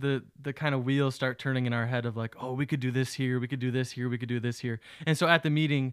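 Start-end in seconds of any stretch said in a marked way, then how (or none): none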